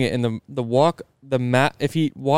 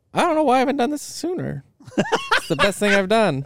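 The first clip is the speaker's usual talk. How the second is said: put-on very high, swooping, sing-song old lady voice; 11 semitones higher than usual. Quoting a woman who recently moved from Maryland to Georgia, old grandma voice. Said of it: "Is this your grandma voice?".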